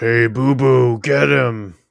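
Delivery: very slow, drawn-out zombie cartoon-bear voice. Joking that the zombie bear in the fight speaks: zombie Yogi Bear voice. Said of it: "It's a big zombie Yogi Bear".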